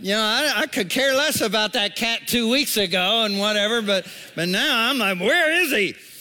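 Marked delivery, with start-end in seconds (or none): 5.2-6.0 upset, pressing, high-pitched voice. Retelling asking where the cat is: retelling an upset demand.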